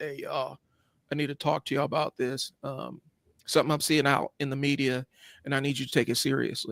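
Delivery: hushed, grave, dead-serious, all-business tone. Retelling a guest speaker addressing the Cub Scouts: imitating a dead-serious guest. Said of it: "And dude was all serious".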